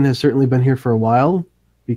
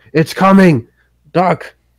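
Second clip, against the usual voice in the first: high, loud, urgent shouting; 6 semitones higher, 5 dB louder than usual. Voicing a soldier warning that the dragon is coming: soldier shouting. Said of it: "one of the soldiers shout".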